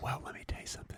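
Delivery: very soft whisper, right into the mic. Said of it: "'cause you can't hear me when I'm whispering".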